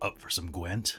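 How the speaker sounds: breathy, hushed delivery. After a failed first try, taking a second try at Geralt voice. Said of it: "Let me let me let me put it this way".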